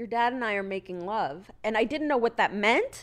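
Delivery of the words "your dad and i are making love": normal talking voice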